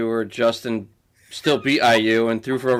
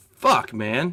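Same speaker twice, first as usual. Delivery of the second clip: ordinary talk, nothing marked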